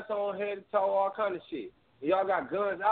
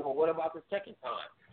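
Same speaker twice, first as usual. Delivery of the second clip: snide, condescending, sarcastic, talking-down retort; 4 semitones lower, 3 dB quieter than usual. Retelling a traffic stop, quoting the officer's reply: imitating a condescending, sarcastic remark. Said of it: "he was being condescending and sarcastic".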